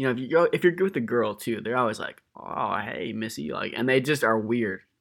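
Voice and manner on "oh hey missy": mock-creepy, much quieter, slower. Speaker mimics grimy guys greeting a girl, imitating a creepy voice. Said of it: "they always got this creepy voice".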